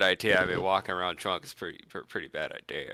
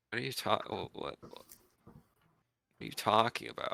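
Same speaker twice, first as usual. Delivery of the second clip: put-on drunkenly confused, tipsy and bewildered; 4 semitones higher, 4 dB quieter than usual. A drunk fighter reacts to a companion pushing jerky on her: drunk and confused. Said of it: "She's a hugger when she's drunk. / You're like our toughest fighter, / She's a hugger when she's drunk. / You're like our toughest fighter, / currently drunk".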